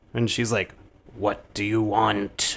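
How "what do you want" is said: put-on eerie, unsettling, slow, creepy old lady drawl. Recapping a scene where the creeper lady greets the nun girl, imitating an off-putting voice. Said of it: "very off-putting voice".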